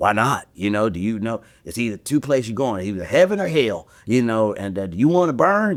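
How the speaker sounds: rough-mannered, gruff voice. Retelling how a deacon confronted people at their doors: imitating a rough deacon. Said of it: "he had this kinda rough demeanor".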